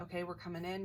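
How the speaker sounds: ordinary delivery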